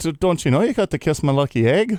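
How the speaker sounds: comic attempted Irish accent. Speaker trying out an accent in conversation, attempted irish accent. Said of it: "How do I do an Irish accent?".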